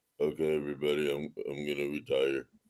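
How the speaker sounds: very low-pitched, soft delivery. Showing Tipton the correct way to say it as he comes out to the stage, Aaron Rodgers impression. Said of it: "you have to say it correctly... You got to work on your Aaron Rodgers".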